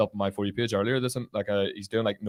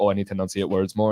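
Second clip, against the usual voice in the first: plain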